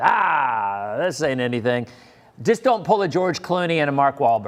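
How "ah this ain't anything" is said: slow put-on New England fisherman drawl. Imitating fishermen shrugging off the storm: new england fisherman voice. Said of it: "that's my New England fisherman voice".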